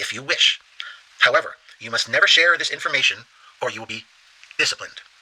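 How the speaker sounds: ordinary delivery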